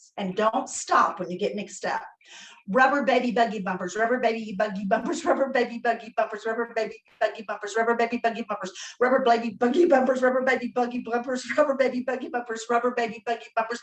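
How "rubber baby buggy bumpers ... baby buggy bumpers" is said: racing rapid-fire delivery, rushed, as fast as possible. Showing a tongue twister exercise: tongue twister as fast as possible. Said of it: "Fast as we can".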